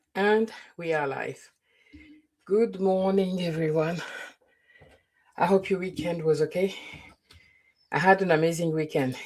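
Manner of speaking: a little breathless. Opening a live stream and greeting everyone, a bit out of breath. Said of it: "If I'm a bit out of breath".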